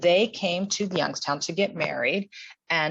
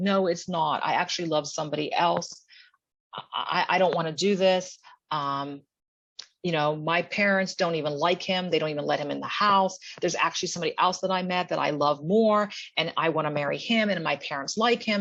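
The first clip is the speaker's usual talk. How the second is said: put-on tearful sobbing through every word. Retelling Anne's words to the judge at the probate office: imitating Anne crying and sobbing. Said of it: "crying and sobbing".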